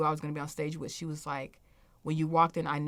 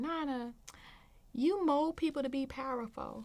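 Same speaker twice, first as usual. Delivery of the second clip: put-on little kid voice, very high; 10 semitones higher than usual. Speaker retells what a young boy told her, imitating a child's high voice. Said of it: "he had a high voice then".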